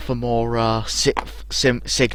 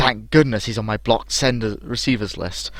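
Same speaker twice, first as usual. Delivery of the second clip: usual speaking voice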